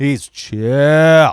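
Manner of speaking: put-on drawl, the word chill stretched out. Recalling how people once called someone chill: Pauly Shore voice. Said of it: "Like in a Pauly Shore voice".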